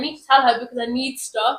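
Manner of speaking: ordinary talk, nothing marked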